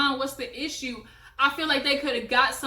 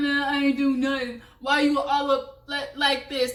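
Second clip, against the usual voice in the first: mock stuttering male voice, as if high. Retelling a man's denial to a woman who accused him, imitating his stutter. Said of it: "he was stuttering like he was so fucked up".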